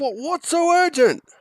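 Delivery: very high, squeaky, loud half-orc voice. Voicing a half-orc captain asked to come help: half-orc captain voice. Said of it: "the half-orc captain pulls his strides up and looks at you and says".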